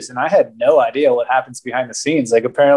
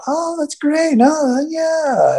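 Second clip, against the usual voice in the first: put-on voice jumped up a couple octaves. Describing how the listener delivered a line in a scene, voice raised a couple octaves. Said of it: "you raise the voice a couple octaves".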